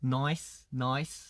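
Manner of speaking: put-on Australian accent. Teaching how Australians say nice, in an Australian accent. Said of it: "나이스를 이제 호주식으로 하면은".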